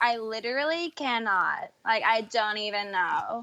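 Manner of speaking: put-on very slow, stretched-out LA girl drawl. Showing friends an impression of la girls: impression of la girls, slow speech. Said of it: "They speak so slowly".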